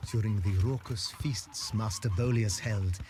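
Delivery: ordinary delivery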